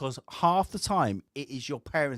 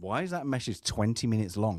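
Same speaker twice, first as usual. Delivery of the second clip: ordinary talk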